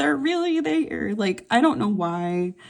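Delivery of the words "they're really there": very high, starstruck gushing. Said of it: "I was like".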